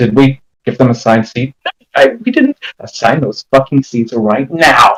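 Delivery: hushed stage half-whisper, kept soft. Voicing a character who half-whispers to Biggs about assigned seats: half-whispering to Biggs. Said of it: "whispers to Biggs".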